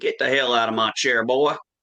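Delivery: put-on loud, broad, thick Southern accent. Retelling a great-grandfather shooing a kid out of his recliner, heavy southern accent. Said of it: "This heavy, heavy Southern accent".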